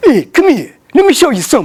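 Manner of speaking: wiseguy mobster-style voice. Speaker retells a rude man beckoning him over, imitating Biscop. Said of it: "He sounds like Guido".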